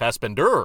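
Fassbender with stress on final syllable -der. Trying out ways to say a name: stress on last syllable of Fassbender. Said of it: "Or at the very end".

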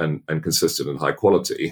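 ordinary delivery

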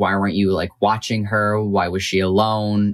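normal talking voice

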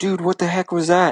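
very high-pitched, heated, hot-headed yell. Retelling yelling at a rider who T-boned him: retelling own yell. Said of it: "I'm yelling at him".

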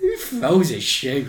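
put-on big dramatic voice, pitch swooping and swinging. Retelling how someone made a deliberate film reference: Austin Powers voice. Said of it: "in a voice that implied that this was a deliberate Austin Powers reference".

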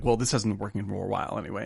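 play-acted, fast, very defensive tone. Retelling what a man said to a woman, retelling a very defensive reply. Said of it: "he says very defensively".

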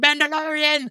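put-on high, loud, excited kid yell. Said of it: "he just kept yelling".

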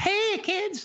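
very high, shrill, piercing voice. Comparing his voice with another's, doing Chuck McCann's high shrill voice. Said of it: "his was a little more shrill, a little higher voiced. I mean, he was way up there".

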